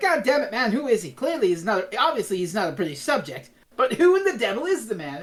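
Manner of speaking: acted, irritated, angry, fed-up grumbling rant. Retelling a scene where Mister Chin complains about the Doctor: imitating Mister Chin angrily complaining. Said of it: "He's all pissed off at the Brigadier".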